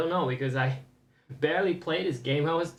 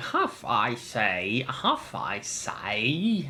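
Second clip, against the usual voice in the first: put-on overdone, over-the-top British accent, very slow and drawn out; 4 semitones lower than usual. Imitating how a game character will sound: over-the-top british accent. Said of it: "such an over-the-top accent".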